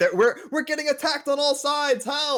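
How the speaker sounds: overdramatic put-on panic, very high and rising. Voicing a panicking character after a traumatic fight: dramatic panicked cry. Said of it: "I'm making a big deal out of it".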